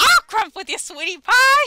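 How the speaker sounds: bad cartoon housewife voice, shrill, very high, very loud. Trying to recall what else Marge says, do a horrible Marge impression. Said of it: "our merges are horrible".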